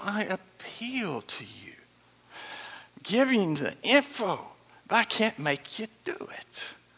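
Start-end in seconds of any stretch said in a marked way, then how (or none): 0.0-1.7 slow, whispered, pleading tone. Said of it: "he is pleading".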